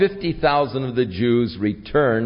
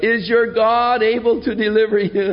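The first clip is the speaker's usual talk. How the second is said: mock-mournful lamenting cry, higher, louder, slower; 10 semitones higher than usual. Retelling the scripture scene where the king cries out, acting out a lament. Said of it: "sort of in a lament".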